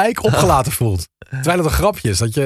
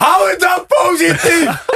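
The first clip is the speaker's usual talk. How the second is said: acted sudden shout, much higher and slower; 4 dB louder than usual. Retelling how someone suddenly stood up and called out: retelling a sudden shout. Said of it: "zou Anton Griep niet opstaan en ineens roepen".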